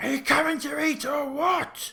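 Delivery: very high, far-reaching, carrying shout. Voicing a character calling everyone in to eat: shout. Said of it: "you hear a shout from Davian".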